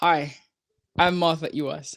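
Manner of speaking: friendly, clear, professional, smiling, slow and clear. Demonstrating how a new leader introduces herself to the team, said with a smile. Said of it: "I say it with a smile".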